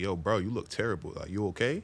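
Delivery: ordinary talk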